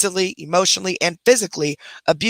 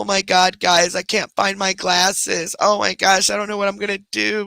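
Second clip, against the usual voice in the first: put-on weepy distress, fake crying, over-emotional; 2 semitones higher than usual. The speaker mocks someone who pulls attention onto themselves, with mock fake crying. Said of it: "fake crying and trying to get all emotional".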